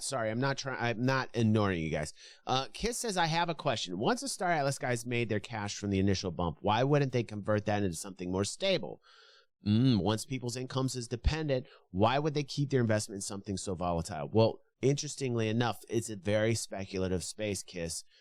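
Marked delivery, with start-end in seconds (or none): none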